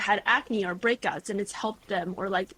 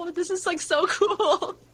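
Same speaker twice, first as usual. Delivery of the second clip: high, giddy, excited gushing. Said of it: "I get really excited".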